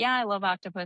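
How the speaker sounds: ordinary delivery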